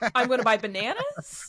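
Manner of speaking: Canadian upspeak with rising intonation. Demonstrating how Canadians talk, Canadian upspeak. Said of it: "it's all very questiony".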